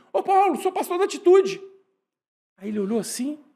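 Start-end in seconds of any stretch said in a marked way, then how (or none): 0.1-1.6 very high, loud shouting. Retelling calling out among six thousand people: retelling own past shout. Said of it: "eu gritei assim".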